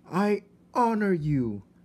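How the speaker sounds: very high, loud, ringing shout. Reading Despereaux speaking to the princess, shouted. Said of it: "shouted Despereaux".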